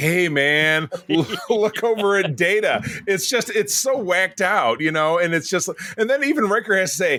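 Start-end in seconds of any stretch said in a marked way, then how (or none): 0.0-2.8 put-on, very slow, drawn-out stoner drawl. Retelling an episode scene about Picard, imitating stoned Picard. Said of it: "like a guy's been smoking weed".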